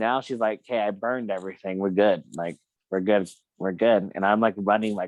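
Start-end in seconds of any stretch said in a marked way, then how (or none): none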